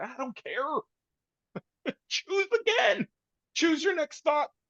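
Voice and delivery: very high voice, talking through laughter. Telling another speaker to choose a new thought, laughing while talking. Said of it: "I'm laughing only 'cause".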